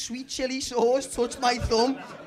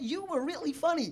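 put-on Norwegian accent; 2 semitones higher, 6 dB quieter than usual. Retelling what a woman said to the speaker, in a Norwegian accent. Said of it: "I'm going to try and do the accent".

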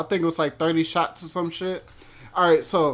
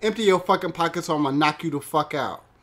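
mock dead-serious, threatening tone. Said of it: "he just got really fucking serious".

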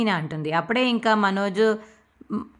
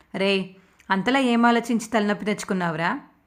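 plain

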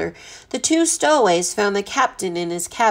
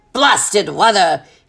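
with a growl; 5 dB louder than usual. A ship captain catches a sliding candlestick as the ship rolls, growled. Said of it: "he growled".

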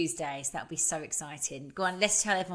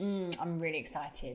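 ordinary talk, nothing marked

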